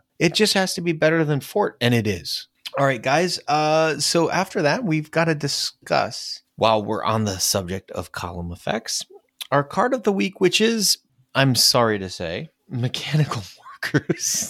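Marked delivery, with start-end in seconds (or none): 12.7-14.5 words spoken through giggling laughter. Naming the card of the week, laughing while saying it. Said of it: "I can't say it without laughing".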